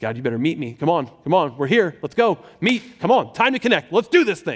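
put-on anxious, pleading, urging tone. Retelling praying to God on a drive, acting out anxious pleading. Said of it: "I feel this anxiety rising in me".

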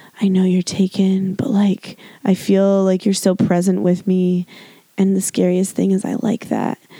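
put-on whispered movie voice. Retelling a movie scene, the speaker imitates Kevin Bacon whispering to her. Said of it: "he's whispering".

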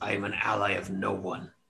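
a little growl under the words. Voicing a tiger who is called an ally of the orcs: growling a little. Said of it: "the tiger kind of growls a little bit and says".

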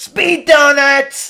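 put-on loud, very high-pitched annoying teen voice. Retelling how a game character sounds: Rabbid Luigi voice. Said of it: "he sounds like an annoying teenager".

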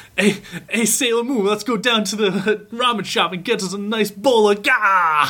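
crazy exaggerated Brooklyn accent. Recalling the Brooklyn accents of an anime dub, crazy Brooklyn accent. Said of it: "craziest Brooklyn accents".

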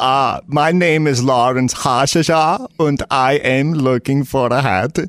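English spoken with a put-on German accent. A customer at Alabaster's Haberdashery introduces themselves, in a German accent. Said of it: "but you sound German".

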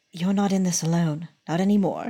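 whispered line in put-on voice. Whispering in a paralyzed ally's ear during a fight: whispering in character. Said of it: "whisper in his, uh, ear".

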